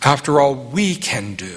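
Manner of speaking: "we" lifted and leaned on.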